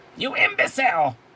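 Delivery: very high, loud, berating put-on villain shriek. Chastising someone who screwed something up, yelling in the Cobra Commander voice. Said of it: "yelling at him in the Cobra Commander voice".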